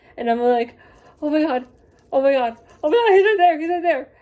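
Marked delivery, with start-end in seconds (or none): 1.2-4.0 frantic, loud, rushed, star-struck babbling. Retelling seeing him across the line, imitating own freaking out. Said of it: "really freaking out".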